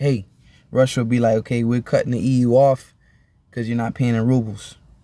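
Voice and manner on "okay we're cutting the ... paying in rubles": plain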